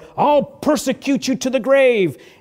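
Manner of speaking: very loud, high, shrill, booming, threatening beast roar. Speaker voices the beast threatening believers, roaring beast voice. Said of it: "The beast and the Antichrist may roar".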